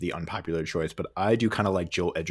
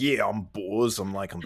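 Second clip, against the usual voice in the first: put-on Cockney accent; 2 semitones higher than usual. Imitating an actor who never drops his accent: Ray Winstone impression, Cockney accent. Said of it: "never loses his, like, Cockney accent".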